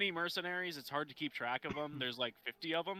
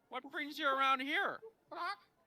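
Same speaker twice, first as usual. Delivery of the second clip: parrot voice, much higher; 12 semitones higher than usual. A player greets a bird in a role-play scene, parrot-like voice. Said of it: "try not to do it as a parrot".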